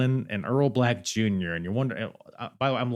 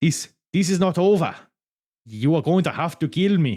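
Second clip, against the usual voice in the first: put-on Italian accent, pitched up; 6 semitones higher, 4 dB louder than usual. Retrying Laura Di Matteo's line from the stage, in an Italian accent. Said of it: "this is my Italian accent".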